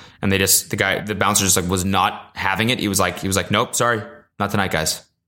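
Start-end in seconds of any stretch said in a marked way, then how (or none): 3.5-5.0 put-on calm, menacing tone. Retelling how the bouncer turned the guys away, imitating his calm menace. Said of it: "the calmest, like don't fuck with me voice".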